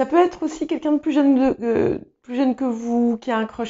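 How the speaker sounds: flustered, stammering, stumbling babble, tripping over words. Telling the audience what the week may bring, stammering. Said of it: "je bafouille".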